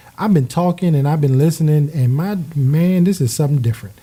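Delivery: normal talking voice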